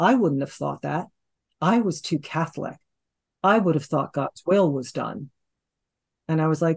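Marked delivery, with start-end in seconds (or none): none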